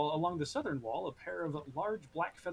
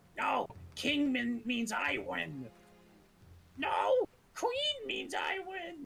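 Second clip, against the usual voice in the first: very high, sing-song, swooping, squabbling goblin voice; 11 semitones higher than usual. Game master voicing a goblin heard bickering about cards in a watchtower, goblin voice. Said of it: "you hear one go".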